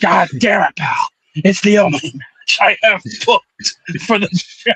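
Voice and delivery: put-on angry voice. Imitating a furious Vince McMahon complaining about his show: Vince McMahon impression, pissed off. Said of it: "He's like".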